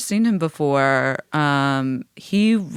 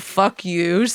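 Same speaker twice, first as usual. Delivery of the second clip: ordinary delivery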